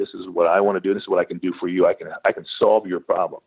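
ordinary delivery

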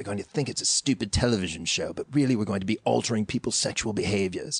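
put-on British accent. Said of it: "That's why I'm doing a British accent".

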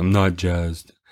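mock-sad voice. Podcast host answering a co-host's teasing, in a put-on sad voice. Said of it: "I'll get sad face and sad voice".

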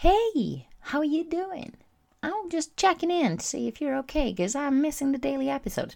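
very high-pitched voice. Quoting another listener who is checking in: imitating a listener's voice. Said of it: "whatever your voice is".

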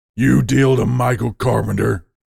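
deep, rough bearlike snarl dropped an octave. The narrator confronts a man in the dark, in a deep bear-like snarl. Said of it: "I lower my voice an octave, put some ursine snarl into it".

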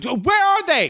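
shrill, very high yell. Telling the guest how she acts, imitating her yelling. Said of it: "just starts yelling".

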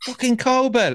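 high shout.

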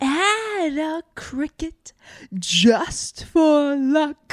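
put-on high, very slow, drawn-out old grandma voice. Asked to do the Mulan impression: imitating the grandma from Mulan. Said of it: "Do your Mulan impression".

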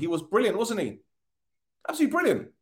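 high, mock-gushing sarcastic tone.

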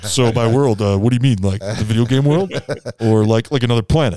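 put-on smoky voice of another man. Predicting what a man will say if asked to repeat it, in a Todd impression. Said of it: "Is that your Todd?".

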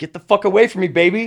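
reenacted, mock shouting. Retelling a night out, repeating what they yelled at a drunk kid: retelling a yell. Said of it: "I'm just yelling at this kid".

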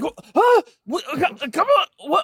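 very high, frazzled, swooping, stressed outburst. Imitating someone reacting when the Seminoles miss a tackle: imitating a stressed football fan. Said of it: "That's what he sounds like".

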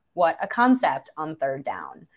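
ordinary talk

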